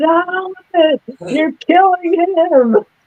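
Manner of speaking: very high, slow, pleading squeal. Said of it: "I said".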